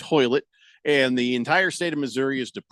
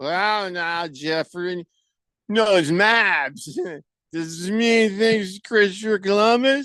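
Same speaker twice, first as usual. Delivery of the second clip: put-on sloppy drunken slur, pitched up, one word dragged out; 6 semitones higher than usual. Reading a message aloud as if its writer were drunk: mock-drunk [name] reading. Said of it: "let me read it as if he's drunk".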